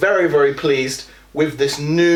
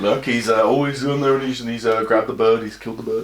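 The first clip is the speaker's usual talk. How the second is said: mock-bored sports commentator voice, much lower; 4 semitones lower than usual. Replaying his earlier narration, imitating a bored golf commentator. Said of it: "I went for like a really bored golf commentator".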